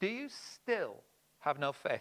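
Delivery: stress landing heavily on the word still. Quoting Jesus' words to his disciples, with stress on still. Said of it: "and the still".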